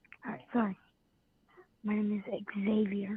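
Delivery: hushed, quiet whisper. A caller introducing himself to the host, whispering. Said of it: "Why are we whispering?".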